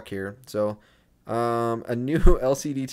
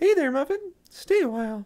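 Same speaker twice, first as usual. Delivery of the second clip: put-on, very high-pitched girlish voice. Voicing Alec as she greets the speaker in the game: Alec character voice. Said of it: "I don't know why I gave her that voice".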